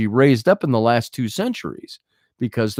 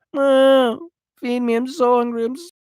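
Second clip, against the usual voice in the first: very high, pleading, begging cat voice; 10 semitones higher than usual. Acting out the cat begging for more food: voicing a begging cat. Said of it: "he's begging for more food".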